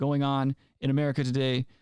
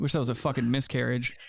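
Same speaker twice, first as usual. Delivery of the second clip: ordinary delivery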